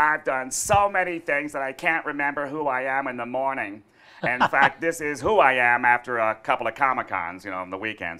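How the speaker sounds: very loud, high cartoon voice, belted out. Answering an interview question after being asked: Squidward's voice. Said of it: "answer me in Squidward's voice".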